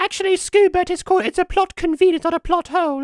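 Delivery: very high, very loud squeaky hamster voice. Speaking as the hamster to Scoobert, in a hamster voice. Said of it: "why are you doing the voice though?".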